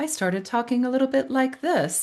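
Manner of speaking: very high, short-breathed, people-pleasing voice. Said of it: "I would start getting really high pitched".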